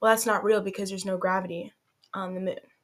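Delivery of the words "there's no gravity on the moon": ordinary talk, nothing marked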